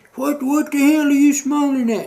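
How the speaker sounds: very high, shrill, screaming sergeant voice. Retelling a command sergeant major screaming in one's face: imitating a scream. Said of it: "And he's screaming at me".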